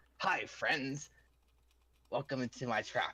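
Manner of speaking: very high, small gnomish voice. Narrating to the players, the storyteller voices a gnome stepping out of the stone: Hive's very high gnome voice. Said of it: "in a very high high voice as this little gnome walks out and says".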